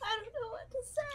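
high, breathless, helpless laughing through every word.

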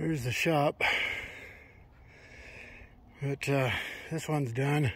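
short of breath, winded. Showing a finished job at 7,000 feet, out of breath. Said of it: "I'm out of breath".

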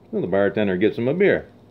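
plain

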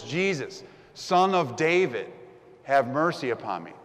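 loud pleading yell. Retelling a man yelling to jesus after being told to be quiet, retelling a loud yell. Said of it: "He yells even louder".

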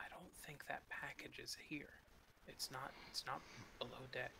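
soft, hushed whisper. Crouching and looking over his shoulder, a character speaks to his companion: whispering. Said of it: "and I whisper to him".

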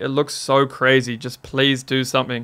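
normal talking voice

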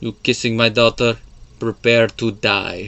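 put-on Spanish-accented delivery. Acting out a father catching a man with his daughter, in a spanish accent. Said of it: "that's more of a Spanish accent".

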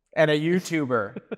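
passionate emphasis.

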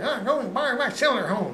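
high-pitched backwoods hillbilly voice. Retelling what a bearded man said when asked about another mechanic's toolbox, hillbilly voice. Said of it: "he talked like a hillbilly".

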